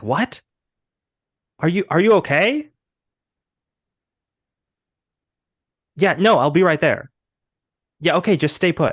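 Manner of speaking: mock alarmed voice. Retelling how the detective answers an urgent phone call, acting out a distressed reaction. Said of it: "He looks distressed and he's like".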